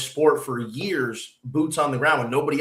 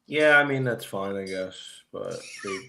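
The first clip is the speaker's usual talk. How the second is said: depressed, downcast, deflated, low and quiet voice; 6 semitones lower, 5 dB quieter than usual. Replying to a friend about networks airing more games, sounding depressed. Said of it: "You you sound depressed".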